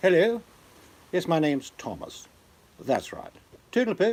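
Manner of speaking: very high, sing-song, swooping put-on British accent. Show how an old-time actor sounded in real life when not acting, in a put-on British accent. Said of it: "but sounded like this in real life".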